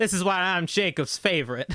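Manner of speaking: put-on southern US accent. Redoing an in-character line in a tabletop game: southern accent. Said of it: "I gotta do it in a southern accent".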